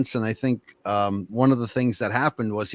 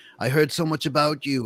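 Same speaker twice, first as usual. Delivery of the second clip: put-on Australian accent, pitched up; 5 semitones higher than usual. Retelling what a man said when he called, in an Australian accent. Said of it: "in his Australian accent".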